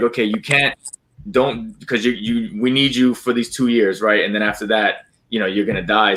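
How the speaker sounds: ordinary delivery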